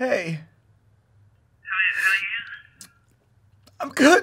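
dejected, downcast voice. Acting a phone call, answering a friend's greeting: sounding down. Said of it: "you sound kind of down".

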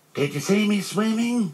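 very high, proud, excited little squeak. Narrator reads a character's line as he climbs out of the pool: excited squeak. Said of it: "Squeaked Roo excitedly".

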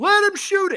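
put-on very high screamed yell. Reenacting a sportsbook bettor screaming for the player: imitating a guy screaming. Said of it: "the guy that was screaming".

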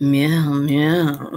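seductive, sultry put-on voice, drawn-out meow. Between comic titles, meowing: sexy voice. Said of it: "Let me do it in my sexual voice".

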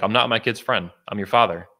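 imitated stern yet warm tone. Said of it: "he said it very sternly".

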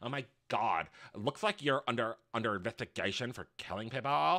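very low, very soft, hushed effeminate and flamboyant voice. Retelling what the twink said to another person: imitating an effeminate man.

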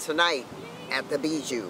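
plain

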